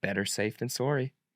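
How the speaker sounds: put-on Canadian accent. Offering his version of the saying, the speaker says it in a canadian accent. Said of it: "And I'll say it with a Canadian accent".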